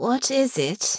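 hoarse, scratchy, rough-throated, dubious tone. Honor asks Mabel about her old family remedy, voice hoarse and scratchy. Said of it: "Her voice came out hoarse and scratchy".

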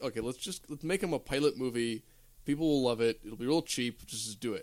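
ordinary delivery

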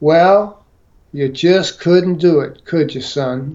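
acted strange Southern accent. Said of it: "he had this odd Southern accent".

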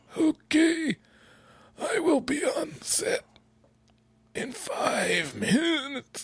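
creepy, very slow, very high, drawn-out swooping voice. Retelling how an actor stayed in character on set: imitating Lupita Nyong'o's Red voice. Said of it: "only using that voice".

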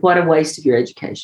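normal talking voice

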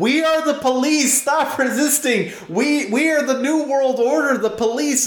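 play-acted, very high, commanding police officer shouting. Retelling role-playing with friends, yelling at civilians: retold yelling as police. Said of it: "And I was like".

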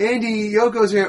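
loud, high-pitched calling out.

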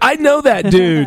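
bad put-on surfer-dude drawl, high and slow.

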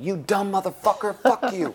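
put-on, high, shrieked screaming tirade. Retelling a fight, the wife on the balcony yells at her husband below, imitating someone screaming. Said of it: "screaming at me".

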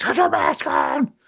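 very high, drawn-out, acted-out yell. Retelling how someone yelled at a friend stretching: imitating someone yelling. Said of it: "yelled at him".

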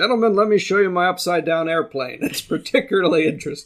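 stately, very pronounced delivery. Joking about a stamp-collector version of the film: Walter Pidgeon impression. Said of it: "Walter Pidgeon doing his very best Walter Pidgeon".

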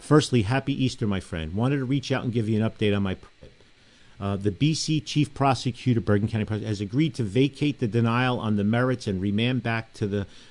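ordinary talk

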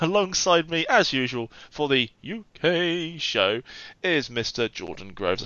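slow, badly done put-on voice. Introducing the co-host on the show: terrible Matt Berry impression. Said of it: "That's my Matt Berry impression, which is terrible".

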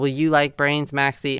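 ordinary talk

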